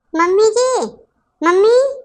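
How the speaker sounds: cross, demanding, angry calling out. The younger daughter-in-law calls out to her mother-in-law: angry calling out. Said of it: "क्यों इतना गुस्सा के बोल रही हो?".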